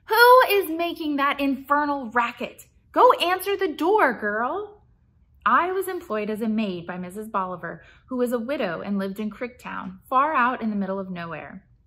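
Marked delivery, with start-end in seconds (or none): 0.1-4.8 put-on ancient, piercing, shrill high old woman voice shouting. The widow yells from inside over the ringing bell, ordering the maid to the door. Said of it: "Bolivar shouted too, her ancient voice only slightly less shrill".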